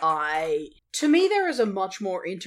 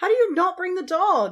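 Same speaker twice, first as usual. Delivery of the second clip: high, loud, cross, exasperated outburst. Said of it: "I was very cross".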